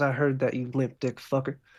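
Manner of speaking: muttering under her breath. Voicing a nurse muttering an insult under her breath: muttering under her breath. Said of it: "under her breath, she goes".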